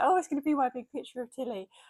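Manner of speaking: tearful, emotional voice, crying while speaking. Retelling opening a parcel of prints: retelling crying while talking. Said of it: "all emotional and I was crying".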